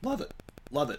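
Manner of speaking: soft voice cracking and breaking on the words. Praising another team's hitter, voice cracking. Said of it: "As my voice just cracked".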